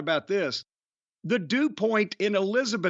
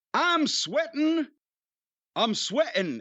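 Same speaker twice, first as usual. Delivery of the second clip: put-on high-pitched New Jersey accent; 7 semitones higher than usual. Repeating what Candido and Tammy from New Jersey used to say, New Jersey accent like Candido and Tammy. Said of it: "as Candido and Tammy used to say, because they were from New Jersey".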